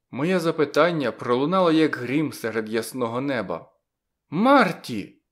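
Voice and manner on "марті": abrupt, sudden, piercing high shriek. Narrator reads a woman suddenly shrieking a name in reply: sudden piercing shriek. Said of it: "зненацька пронизливо скрикнула Кармен".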